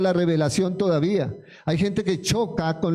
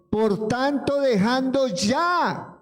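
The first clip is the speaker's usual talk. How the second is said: slow, forceful, strong commanding military-style tone; 6 semitones higher than usual. Reading a Bible passage aloud as the preacher asked, slow, strong commanding voice. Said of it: "despacio y con voz fuerte".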